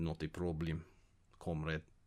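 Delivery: put-on Russian accent, very low and soft. A podcast co-host answers the host's thanks for joining: fake Russian accent. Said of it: "We do Russian accent".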